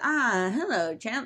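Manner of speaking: put-on British accent. Retelling how Park came up and greeted them, British voice. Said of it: "in like a British voice".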